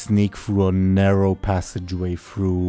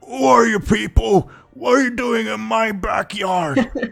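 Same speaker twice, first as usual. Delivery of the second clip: put-on elderly man voice, pitched very high; 3 dB louder than usual. Voicing an old man who finds strangers in his backyard: old man impression. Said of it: "that was a solid old man impression".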